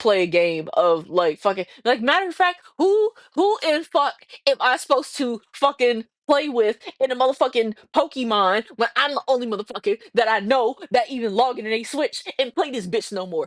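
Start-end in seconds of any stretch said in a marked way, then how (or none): 2.8-13.5 fake annoyed, raging outburst. Complaining that nobody else plays Pokemon on Switch: fake Nikocado Avocado rage. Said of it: "I'm doing a little bit of Nikocado avocado like fake rage".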